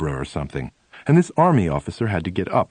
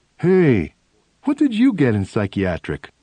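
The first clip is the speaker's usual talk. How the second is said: put-on dopey, dim-witted, dumb-sounding voice; 3 semitones higher, 3 dB louder than usual. Retelling showing their test paper to the guy next to them; put-on stupid-sounding voice. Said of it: "in a rather stupid-sounding voice".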